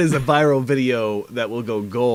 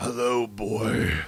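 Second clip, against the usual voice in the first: put-on hero voice, as badass as possible; 8 dB quieter than usual. Answering a request to say "boy" like the game avatar: Kratos voice. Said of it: "can you just give me a boy?".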